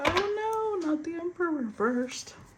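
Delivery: high squeaky acted voice. Reading a reversed tarot card, sounding like the Gingerbread Man in Shrek. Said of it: "Now I sound like the gingerbread man in Shrek".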